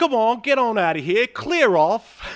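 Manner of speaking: put-on very high, loud voice, thick British accent. Retelling what a man in a film says to someone: imitating a thick british accent. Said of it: "the man with his thick British accent".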